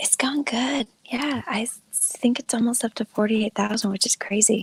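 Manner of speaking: whispering. Answering how the campaign is going, whispering so her dad can sleep. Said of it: "I'm gonna have to whisper".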